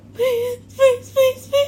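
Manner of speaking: high, tearful pleading tone while sobbing. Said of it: "oh, I'm crying".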